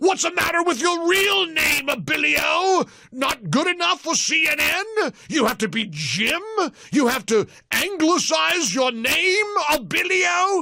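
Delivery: very high-pitched, booming, ranting voice.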